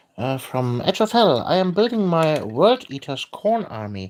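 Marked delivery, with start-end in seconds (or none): none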